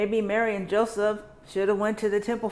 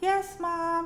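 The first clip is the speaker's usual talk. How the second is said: sweet little voice, pitched high; 9 semitones higher than usual. A mother recounts calling for her child in a mall, imitating Lily's sweet little voice. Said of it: "her sweet little voice".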